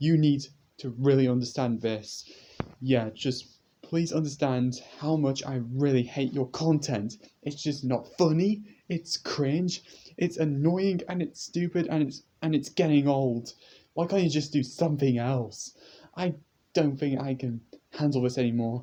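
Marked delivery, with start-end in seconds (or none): 3.1-18.8 somewhat heated, annoyed, a little angry rant. Addressing the makers of a channel whose content they hate, a little bit angry. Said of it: "I'm really sorry if I'm if I sound a little bit angry".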